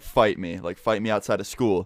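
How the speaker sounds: ordinary talk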